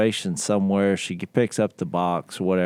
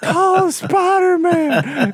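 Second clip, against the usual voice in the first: mock child shouting, much higher and louder; 6 dB louder than usual. Retelling how a kid yelled during a spider scare: imitating a kid shouting. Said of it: "he starts shouting at her at the top of his lungs".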